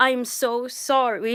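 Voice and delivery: put-on big-guy voice. Retelling what a big guy said to her, she quotes him imitating Rocky's accent. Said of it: "He said it in his Rocky".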